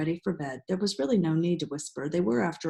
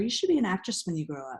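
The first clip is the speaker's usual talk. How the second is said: plain reading voice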